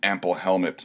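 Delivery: ordinary delivery, nothing marked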